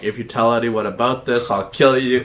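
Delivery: imitated crying, angry, tearful tone. Retelling threatening a classmate in the principal's office: imitating a crying angry threat. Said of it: "threaten his life because I'm crying".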